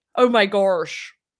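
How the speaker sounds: accent from Pittsburgh. Comparing Pittsburgh and Delco accents, the speaker demonstrates a Pittsburgh accent. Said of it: "the Pittsburgh accent is like the Delco accent".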